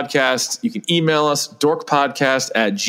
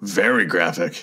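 very low cartoon monster voice; 7 semitones lower than usual. Speaker chatting with co-hosts: Hormone Monster voice. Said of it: "you sounded like the actual hormone monster right there".

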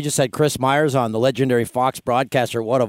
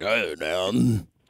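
put-on broadcaster voice, lower and quieter; 6 semitones lower, 5 dB quieter than usual. Describing a coworker greeting in the hallway: imitating Chris's voice. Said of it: "that's Chris's voice when you see him".

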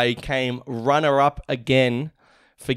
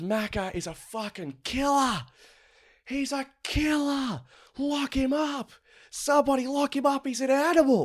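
very high, drawn-out screaming rant; 12 semitones higher, 5 dB quieter than usual. Retelling a mate screaming accusations in a bar: imitating someone screaming. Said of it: "And he just starts screaming".

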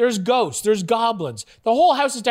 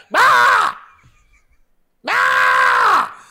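put-on kid's shrill, very high holler; 13 semitones higher, 7 dB louder than usual. Describing a guy who screams for his mom, imitating someone screaming for Mom. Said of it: "he's screaming for his mom".

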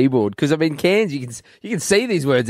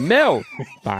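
"Melbourne" split: "Mel", a pause, then "bun"; 5 semitones higher than usual. Showing how they say Melbourne, pause between Mel and bun. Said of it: "I say Mel and then I pause".

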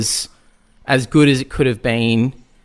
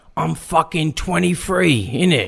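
put-on older London gangster voice, pitched higher; 5 semitones higher than usual. Imitating an older actor playing his character ten years younger: imitating Ray Winstone. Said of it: "it's Ray Winston now, ... and he's like".

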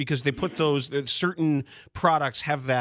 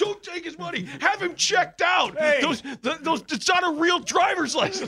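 mock screaming, pitched much higher; 14 semitones higher than usual. Retelling what was yelled about him at the store, imitating Crane Kenny screaming. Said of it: "She's screaming".

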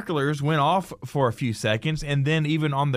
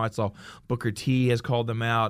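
ordinary delivery

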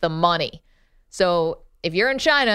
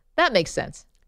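fake-sounding, plainly sarcastic, pitched-up tone; 5 semitones higher than usual. Responding to a plan to become a fireman after winning money: sarcastic. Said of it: "I'm being sarcastic".

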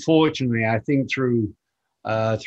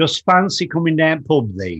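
put-on old-fashioned Yorkshire dialect with biblical ring; 4 semitones higher, 3 dB louder than usual. Imitating how a father used to talk: imitating father's Yorkshire-like accent. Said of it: "Do you know what that means?".

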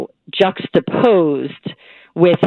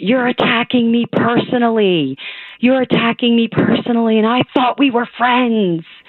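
mock agitated, heated, pitched-up accusatory outburst; 6 semitones higher than usual. Retelling being screamed at after offering a handshake: imitating someone screaming. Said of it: "he was screaming at me".

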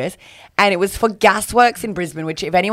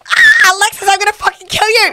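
mock, high, loud yell through laughter. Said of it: "And I go".

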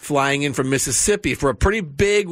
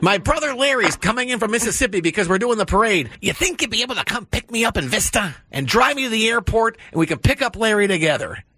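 voice sounding as if heard over a phone; 7 semitones higher than usual. Retelling a phone call from Gary asking for a ride: impression of Gary. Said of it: "I'm gonna do my best imitation of you".

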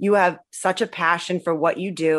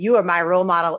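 usual speaking voice

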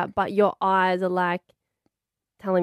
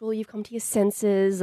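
usual speaking voice

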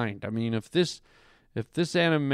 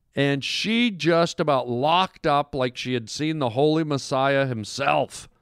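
ordinary talk, nothing marked

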